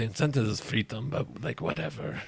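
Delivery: very hushed, quiet, under-the-breath mumble. A character hopping through the trees, muttering to himself. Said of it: "like muttering to himself".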